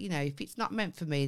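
ordinary delivery

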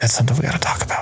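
fast, hushed whisper.

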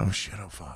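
put-on mutter under breath. Retelling what a man said live on television, muttering under his breath. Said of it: "under his breath".

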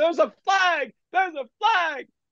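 very high, shrill scream, pitched way up. Retelling calling a play while his partner describes the action: retelling own screaming. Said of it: "And I'm screaming".

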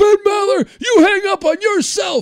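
very high-pitched, shrill, loud, unhinged screaming. Recalling a call to Ben Maller: imitating Mark screaming. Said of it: "he's just screaming like a lunatic".

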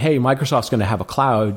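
ordinary delivery

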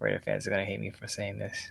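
very quiet whisper under the breath. Asked who wins the game, the guest gives a prediction: whispering. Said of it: "You're whispering to yourself".

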